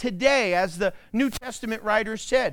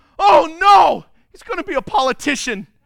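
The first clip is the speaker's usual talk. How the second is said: mock yell, louder and higher; 6 semitones higher, 10 dB louder than usual. Telling a joke to an audience, acting out the dad in it, retelling the dad's yell. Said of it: "And the dad yells".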